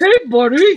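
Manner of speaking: high, loud, chatty parrot voice. Retelling how the parrot greeted people in the store: imitating a talking parrot. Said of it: "turn his head sideways and go".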